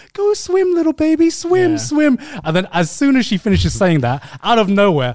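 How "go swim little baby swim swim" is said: very high-pitched, slow voice. Retelling a friend urging released fish to swim off: imitating Sydney talking to animals. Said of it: "you know when Sydney is just, like, talks about a dog or talks about any animal, she's like".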